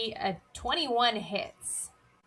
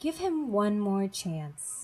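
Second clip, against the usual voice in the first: composed, calm, steady and even voice; 2 semitones lower than usual. Storyteller voices the voice from above answering the lab tech, in a calm voice. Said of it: "the calm voice says up above".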